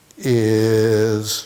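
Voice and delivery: mocking slow speech. Acting out an enlightened person slowly answering what time it is: mocking slow enlightened talk. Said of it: "Another ten minutes".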